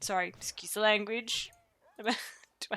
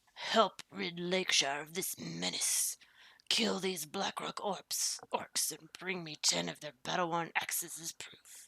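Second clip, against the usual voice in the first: grumpy, cranky, grouchy delivery; 3 semitones lower, 4 dB quieter than usual. Speaker reads a quest-giver's request aloud in the game: grouchy character voice. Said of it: "he's gonna be really grouchy".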